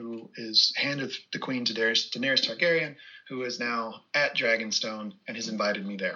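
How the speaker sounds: ordinary delivery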